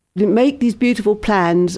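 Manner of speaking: usual speaking voice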